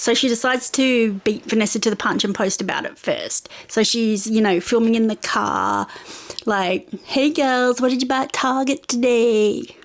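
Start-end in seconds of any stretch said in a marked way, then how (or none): 7.0-9.6 clumsy, bad put-on American accent. Retelling a book character filming a video for her followers: bad American accent.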